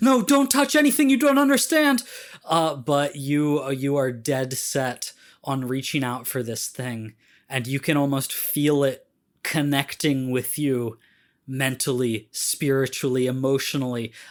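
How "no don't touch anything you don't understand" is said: very high, very loud shout. Voicing a character who warns against touching an object: shouting a warning. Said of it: "Lasaya just shouts".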